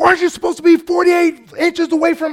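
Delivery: shrieking, very high screaming. Retelling what a man screamed at the speaker, imitating someone screaming. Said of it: "he's screaming at me".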